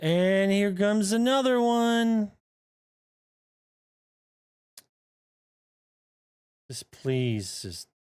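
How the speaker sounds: high, exasperated, frustrated pleading tone. Playing a game as another one comes, frustrated. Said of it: "I'm so frustrated".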